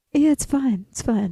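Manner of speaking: play-acted nonchalant, totally unbothered, laid-back. Retelling how Tohi lay in his hammock after finishing the trail: imitating Tohi, super chill. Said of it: "super chill".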